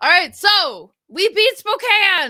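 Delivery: loud, very high, thrilled, swooping, drawn-out excitement. Announcing a win over Spokane to the listeners: loud excited voice. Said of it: "Sorry if I'm loud".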